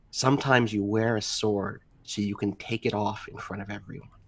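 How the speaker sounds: very quiet, hushed half-whispered aside. Speaker in character, walking to put weapons away, half-whispering to the woodsman. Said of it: "I kind of whisper to the".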